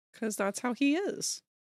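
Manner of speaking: flirtatious, flirty tone. Answering while in character drawing a handsome tiger man: flirty voice. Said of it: "why are you sounding all flirty?".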